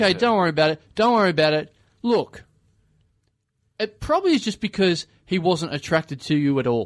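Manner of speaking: plain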